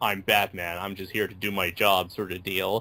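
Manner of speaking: put-on flat hero monotone. Reviewer describing how Batman usually talks in the game: Batman monotone. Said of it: "the very typical monotone".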